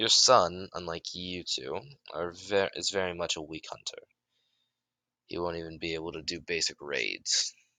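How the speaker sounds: ordinary talk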